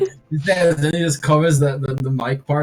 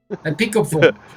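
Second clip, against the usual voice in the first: put-on Russian accent. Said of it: "voice command is easier with a Russian accent".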